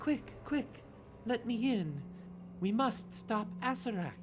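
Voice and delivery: very high whispered spirit voice. Game master voices a spectral rabbit spirit speaking into a player's mind: whispering spirit voice. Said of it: "A voice whispers in your mind".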